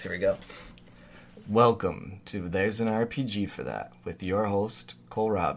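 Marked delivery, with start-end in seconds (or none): 1.5-5.6 radio host style announcer voice. Host doing the show's intro: podcast host voice. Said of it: "let me do the intro with my podcast voice".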